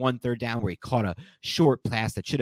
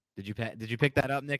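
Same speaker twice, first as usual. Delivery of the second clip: normal talking voice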